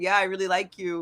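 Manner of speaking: low, level, toneless flat monotone. Imitating a man who talks a little monotone: flat monotone. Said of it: "kind of just talks a little bit monotone when he talks".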